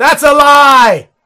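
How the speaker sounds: high-pitched loud yelling.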